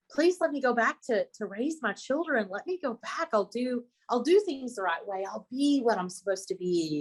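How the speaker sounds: desperate, begging, pleading voice. Retelling a near-death experience, own words back then: retelling a desperate plea. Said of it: "I'm pleading and I'm bargaining for my life".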